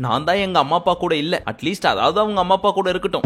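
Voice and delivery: ordinary talk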